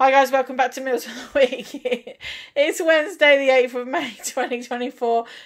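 laughing, giggling uncontrollably through the words. Opening a meals of the week video, the speaker greets viewers while laughing. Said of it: "I'm laughing at something, I can't stop".

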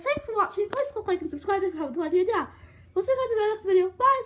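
rushed, rattled-off, high-pitched delivery. Saying goodbye at the end of the video: talking very fast. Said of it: "I'm going so fast".

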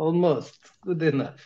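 heavy put-on Russian accent with broken English. Asked whether he is russian, the speaker answers in a strong russian accent. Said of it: "with Russian accent. ... it is strong accent, ... You're a Russian, right? Almost".

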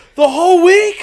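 mock, very high, shrill, loud, furious disbelief. Speaker acts out a man's reaction to his answer, retelling a man getting real mad. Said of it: "He gets real mad".

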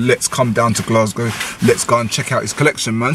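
usual speaking voice

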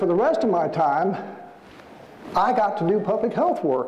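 usual speaking voice

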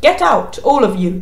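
severe, no-nonsense tone. A narrator reads a priest ordering everyone out of the cathedral, sternly. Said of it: "he said sternly".

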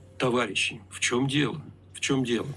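put-on Soviet accent with Soviet-style intonation. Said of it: "спросить с интонацией и произношением товарища Сталина".

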